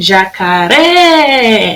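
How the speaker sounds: shouted jacaré with ré stretched and held long. Calling out to the jacaré at the zoo: shouted, ré held longest. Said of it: "Eu vou gritar: jacaré! ... A sílaba que durou mais tempo foi o ré".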